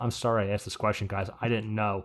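normal talking voice

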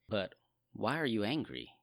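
gentle, soft, caring, compassionate tone. Showing how to read the Lord's question to Cain, with compassion. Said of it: "the compassion behind it".

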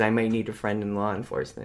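plain

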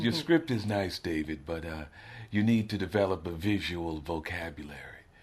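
graceful, polished, elegant, refined way of speaking. Retelling a production designer's advice about the script: imitating Wynn's elegant manner. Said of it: "he's a really elegant man".

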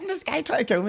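put-on, shrill, very high scream. Retelling how their sister screamed at the door; retelling a scream.

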